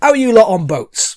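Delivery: put-on very loud, high shout in a Northern English accent. Voicing a character greeting the players before a voyage: northern english accent. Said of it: "shout at it in Northern".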